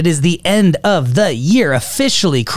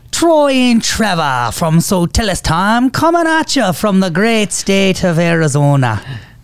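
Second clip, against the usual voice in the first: bad put-on Irish accent, higher; 2 semitones higher than usual. Co-host introducing the show, slipping into a bad Irish accent. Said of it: "You just like switched halfway".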